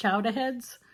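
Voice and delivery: "chowderheads" in Boston accent with the r dropped.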